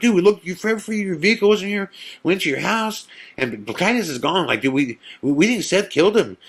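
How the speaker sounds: rapid-fire high babble. Retelling what you said to Glenn when he came over, rapid-fire talking. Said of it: "I'm just talking a million miles an hour".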